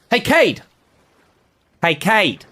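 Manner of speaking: very high, drawn-out shout. Calling out to someone in the scene: shouting a name. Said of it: "I just wanna shout, like".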